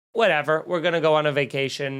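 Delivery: normal talking voice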